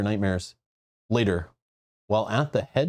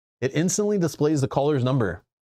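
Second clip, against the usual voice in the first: plain reading voice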